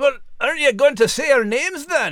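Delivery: put-on dog voice with Scottish accent. Voicing the Scottish Terrier asking the announcer to say their names: Scottish Terrier character voice. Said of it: "the brave Scottish Terrier".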